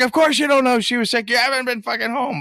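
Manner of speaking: very high-pitched, nagging, scolding shout. Game master voicing an NPC confronting the dwarven fighter in the bar, yelling grandmother NPC. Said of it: "she's yelling at your at your dwarven fighter".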